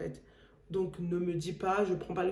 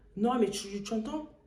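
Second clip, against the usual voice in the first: ordinary talk, nothing marked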